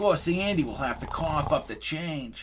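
put-on New York accent. Narrating a story, voice Lucy clowning around in a New York City accent. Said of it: "she said in a New York City accent".

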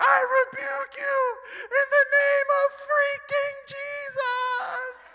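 put-on shrill, very high, very loud sobbing. Retelling climbing his brother Foe while his brother laughed, imitating his own past crying. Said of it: "And I'm crying and I'm like shaking".

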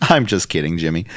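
plain

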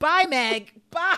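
very loud, high-pitched screaming. Retelling what you screamed at the TV during the show, retelling screaming at the TV. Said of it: "what I was screaming at the TV".

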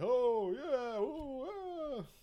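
goofy, loud, very high drawl, "oh" stretched. Describing how a voice actor played Joey: goofy loud Joey voice. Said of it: "it's goofy, loud, like, not, not deep, like, kinda deep, but in, like, a weird way".

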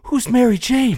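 mock, very high, out-of-breath, panting voice. Retelling the boy sitting against the slammed door, imitating breathing hard. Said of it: "while he's breathing hard".

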